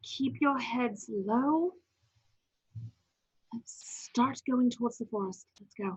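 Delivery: loud stage whisper. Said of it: "I'm stage whispering".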